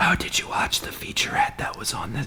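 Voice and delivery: soft, hushed whisper.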